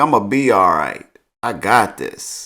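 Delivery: normal talking voice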